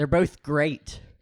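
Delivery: ironic, dripping with sarcasm. Answering a question put to show off sarcasm, sarcastic. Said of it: "Ask me how I feel about".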